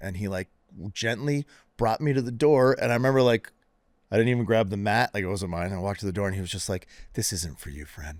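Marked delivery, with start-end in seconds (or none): 7.1-8.2 gentle, extremely condescending tone, acted out. Retelling a yoga teacher showing him to the door: imitating a condescending tone. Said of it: "in the most condescending".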